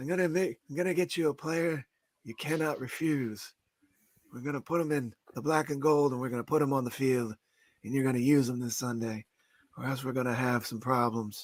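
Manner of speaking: put-on old-school seventies movie mobster delivery. Playing the general manager offering a player: Marlon Brando impression. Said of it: "That's a great Brando impression".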